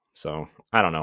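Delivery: ordinary delivery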